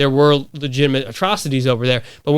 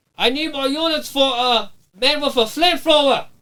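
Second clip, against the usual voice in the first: put-on heavy Colombian accent, pitched very high; 11 semitones higher than usual. Retelling a squad member's call over the radio: thick Colombian accent. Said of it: "it's like thick Colombian accent".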